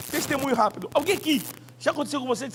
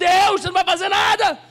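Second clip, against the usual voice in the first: put-on loud, high, indignant angry cry; 7 semitones higher, 7 dB louder than usual. Retelling how he cried out to God back then, reenacting an indignant outburst. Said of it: "E eu estava indignado".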